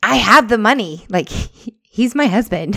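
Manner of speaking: high, drawn-out, long-distance-sounding yell. Retelling yelling at a lady from the bathroom, retelling a yell. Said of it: "And so then I yell at the lady from the bathroom".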